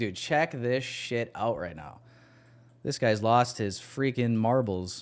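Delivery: ordinary delivery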